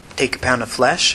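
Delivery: ordinary delivery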